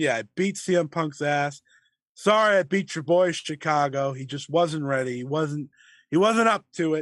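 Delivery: ordinary delivery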